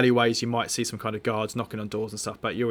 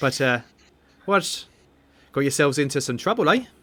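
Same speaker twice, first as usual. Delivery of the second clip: put-on accent drifting between Welsh and Irish; 4 semitones higher, 4 dB louder than usual. Voicing a character asking the group about their trouble, bit Welsh or Irish accent. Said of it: "I'm a bit of a bit Welsh now, but or Irish apparently".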